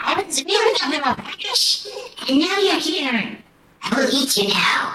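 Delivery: very high, shrill, shrieking, screeching monster voice. Game master voicing a creature that threatens the players, screeching monster voice. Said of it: "It screeches in your mind".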